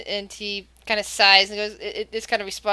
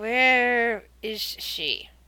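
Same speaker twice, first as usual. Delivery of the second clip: slow, deliberate, talking down as if to someone dense; 3 dB quieter than usual. Voicing a character who asks where she is: slowly, as if to someone slow. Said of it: "he kinda says this slowly".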